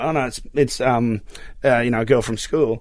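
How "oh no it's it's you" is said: plain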